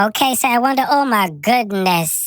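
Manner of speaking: high chipmunk voice. Trying out a voice changer's pitch-up effect, in a high chipmunk voice. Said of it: "I sound like a chipmunk".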